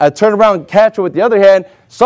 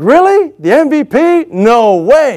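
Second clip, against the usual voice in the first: acted, stunned, very slow, drawn-out shocked disbelief; 4 semitones higher than usual. Recalling the coach naming him mvp, retelling being shocked. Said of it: "I was just shocked, like".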